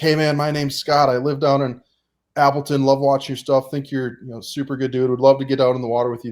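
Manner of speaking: put-on revved-up, pumped, eager, super high-energy voice. Retelling a voicemail from a caller: imitating Scott's super high energy. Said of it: "super high energy".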